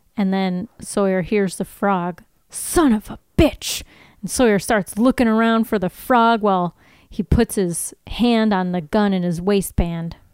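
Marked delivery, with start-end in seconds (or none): 2.5-3.9 slow, heavy, drawn-out Southern drawl. Acting out a scene as Sawyer: Southern Sawyer voice. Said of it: "I do a way more Southern Sawyer".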